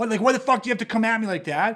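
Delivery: mock-frustrated, acted-out outburst. Describing someone's reaction when bad things happen to him, mock-frustrated.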